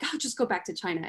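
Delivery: ordinary delivery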